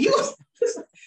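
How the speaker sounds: high, loud, mocking disbelief.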